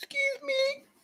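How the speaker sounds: tiny, soft, very high squeaky woman's voice.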